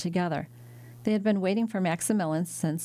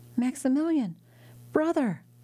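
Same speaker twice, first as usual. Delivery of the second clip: glad, joyful exclamation, pitched up; 7 semitones higher than usual. A daughter sees her brother come through the door, joyful exclamation. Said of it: "she exclaimed".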